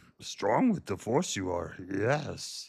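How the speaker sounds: very low-pitched put-on voice. Doing a Yoda accent after being asked about the accent: Yoda voice. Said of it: "my Yoda accent".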